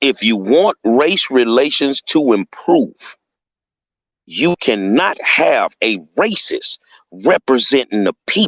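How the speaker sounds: very slow, deliberate, spaced out word by word. Speaker repeating his point to listeners, said really slowly. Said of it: "I'm going to say that real slow".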